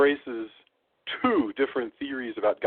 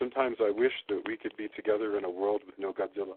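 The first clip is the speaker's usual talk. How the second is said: mock solemn delivery, lower and quieter; 3 semitones lower, 6 dB quieter than usual. Retelling a film scene's line in a garden: imitating solemn tones. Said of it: "In the most solemn tones I can possibly imagine".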